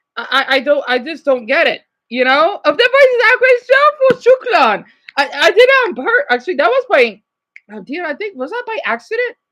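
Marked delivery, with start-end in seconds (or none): 2.1-4.9 Arabic accent, very high and loud. Speaker slips into it by accident while talking, accidental arabic accent. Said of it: "I just did an Arabic accent".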